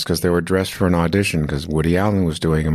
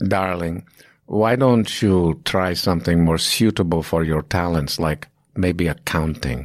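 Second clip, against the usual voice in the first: badly done, put-on Greek accent. Quoting a mean acting teacher's remark to a student, in a bad greek accent. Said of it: "this is my bad Greek accent".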